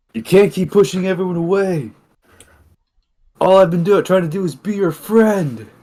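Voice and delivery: very high-pitched, loud shouted call. Voicing a character who calls out to a teammate walking away: shouting. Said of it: "he'll just simply shout out".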